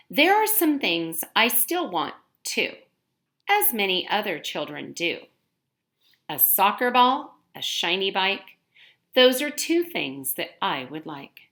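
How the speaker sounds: reading aloud with expression. Modeling for students how to read a passage aloud: reading with expression. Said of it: "practice reading with expression".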